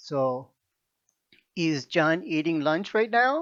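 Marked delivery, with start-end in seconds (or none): 1.5-3.4 voice goes up on "now". Teaching yes-no question intonation in English, rise on now. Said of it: "The voice goes up".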